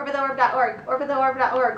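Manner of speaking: very fast, rapid-fire tongue-twister pace. Repeating the website name as a tongue twister, very fast. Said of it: "Say it ten times fast".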